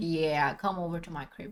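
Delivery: low, mock casual tone.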